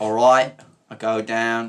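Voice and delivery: put-on accent that sounds Australian. Speaker quotes what JFK said: failed JFK impression, sounds Australian. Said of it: "That's Australian".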